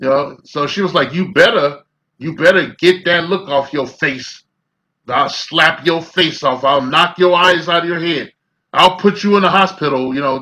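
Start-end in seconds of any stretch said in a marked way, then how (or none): 1.1-10.1 grimy, gritty delivery. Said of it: "She was talking real grimy and shit".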